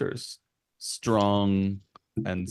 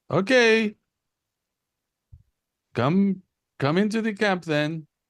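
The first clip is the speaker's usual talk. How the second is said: very high, loud called-out shout; 12 semitones higher, 5 dB louder than usual. Voicing a person at a camp inviting the travelers in: NPC shouting out. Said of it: "they come back and shout out".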